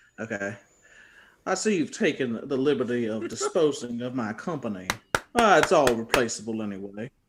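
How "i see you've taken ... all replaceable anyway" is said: put-on American Southern accent for a character. Playing a game round, told the character is Southern: Southern accent. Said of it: "so you got to do a Southern accent".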